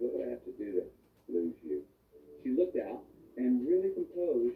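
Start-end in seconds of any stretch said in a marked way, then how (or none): 0.0-1.8 acted-out, very nervous delivery. Retelling asking the person they were dating something, retelling a very nervous question. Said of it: "I asked her very nervously".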